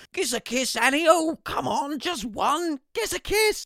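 very high, very loud, yawping cooey yell. Narrator reading his dad running at his mother, yelling and cooeying. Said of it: "(opening words) Hello, my name's [name] Eldridge, and like you, I'm stuck in isolation because of the coronavirus. Unlike you, I accidentally went into isolation with my parents, who are both complete".

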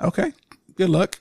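insincere, teasing, sarcastic, mocking tone. Wishing this week's loser luck before their story, sarcastic good luck. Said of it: "I hear your sarcasm and that good luck".

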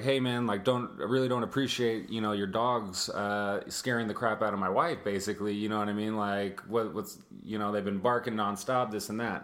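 ordinary talk

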